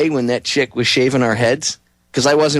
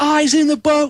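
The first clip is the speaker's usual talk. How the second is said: put-on drill-instructor screaming, higher pitch. Retelling arriving at boot camp on the bus: imitating drill instructors screaming. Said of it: "They start screaming at you".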